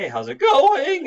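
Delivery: very high, very loud cracking voice. Explaining how boys adjust to a changing larynx, imitating a voice cracking in puberty. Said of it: "they'll be saying".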